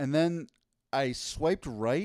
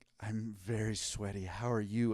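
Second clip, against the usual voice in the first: put-on soft, slow, sultry come-hither tone; 3 semitones lower, 6 dB quieter than usual. Pretending she sent him a sultry message, retelling it in a mock sultry voice. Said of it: "but let's pretend she did".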